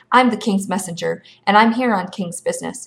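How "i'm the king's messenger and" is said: plain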